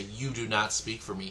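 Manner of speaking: ordinary talk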